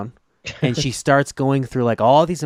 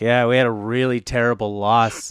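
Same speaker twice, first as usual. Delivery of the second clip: put-on sarcastic voice. Quoting a man who didn't even care, retelling a sarcastic remark. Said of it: "he says it so sarcastically".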